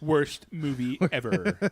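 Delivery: put-on nerdy comic shop fan voice. Reading out a film's mistakes for the others, in the Comic Book Guy voice. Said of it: "in the comic book guy voice".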